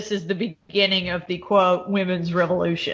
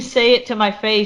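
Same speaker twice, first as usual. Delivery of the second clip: plain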